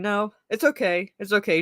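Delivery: ordinary delivery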